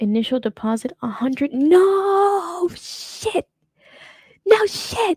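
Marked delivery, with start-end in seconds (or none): 1.5-5.2 very slow, high, stretched-out shriek. Reading the deposit figure on a purchase document and reacting, screaming. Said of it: "I'm sorry. I'm screaming".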